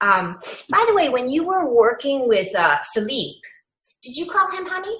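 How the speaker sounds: sweet, open tone. Speaker demonstrating how to raise sexism constructively, in a very nice tone. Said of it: "in a very nice tone of voice".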